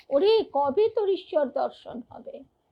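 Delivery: ordinary talk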